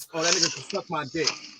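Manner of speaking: crude aside, muttered low under the breath. Retelling what a date said about a waiter: imitating someone muttering under her breath. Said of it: "under her breath".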